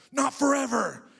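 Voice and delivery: mock snarl, very loud and very high-pitched. Retelling what a man at a temp job said back: imitating a snarl. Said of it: "he like snarled at me".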